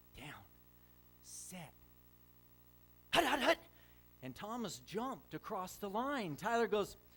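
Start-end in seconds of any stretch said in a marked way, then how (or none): 0.2-3.6 put-on loud, sing-song voice of a little five-year-old. Retelling a five-year-old boy calling a football snap, in Tyler's little five-year-old voice. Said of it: "in his little five-year-old voice".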